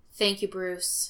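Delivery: tired. A man thanks another man for his offer, speaking tiredly. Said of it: "he says tiredly".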